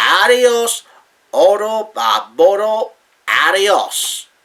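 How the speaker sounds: very slow, careful, put-on Spanish accent. Signing off the program, trying your best at a Spanish accent. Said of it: "I'm going to try my best to say it in a Spanish way".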